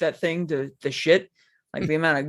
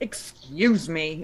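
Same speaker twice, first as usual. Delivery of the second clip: put-on strict, scolding teacher voice. Retelling how a friend's wife scolded people in a game: imitating a strict teacher voice. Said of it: "putting on full teacher voice".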